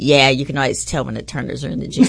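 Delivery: mock deadpan, flat, dry and expressionless. Retelling how a man answered the speaker's apology; retelling a deadpan reply. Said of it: "he looks at me real deadpan".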